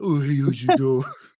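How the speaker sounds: put-on baby talk, cooing. Showing how people baby talk to their dog: baby talk to a pet. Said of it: "baby talking animals".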